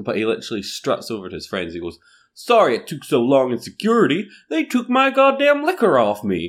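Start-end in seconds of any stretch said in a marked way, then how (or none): 2.3-6.5 brash, loud, swooping put-on American accent, pitched very high. Retelling what an obnoxious American man told his friends after security: American accent. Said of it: "I love your American accent".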